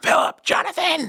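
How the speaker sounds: put-on very high-pitched screaming. Doing an impersonation of his mom screaming at her kids: imitating his mom screaming. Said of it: "I will do this impersonation of my mom".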